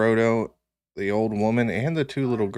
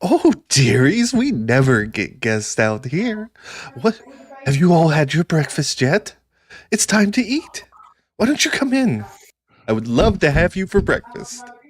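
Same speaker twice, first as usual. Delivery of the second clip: put-on lady voice, high and raised pitch; 5 semitones higher, 6 dB louder than usual. Voicing a lady who invites the guests in: voicing the lady. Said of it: "lady now is looking at you guys, and she is like".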